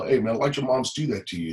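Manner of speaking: put-on casual street-talk voice. Retelling what a man said to him after the incident; imitating street talk. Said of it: "he said it in street talk".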